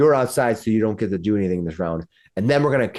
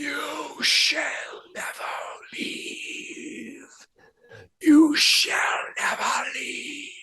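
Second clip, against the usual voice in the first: very slow, drawn-out, ghostly whisper; 5 dB quieter than usual. Game master voices an unseen whisper the players hear: whispering voice. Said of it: "It whispers".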